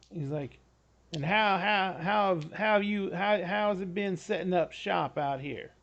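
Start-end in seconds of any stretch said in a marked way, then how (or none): 1.1-5.6 oozing, smarmy, over-friendly voice. Voicing a guy who walks into the new doctor's office: smarmy character voice. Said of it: "he just reeks smarm".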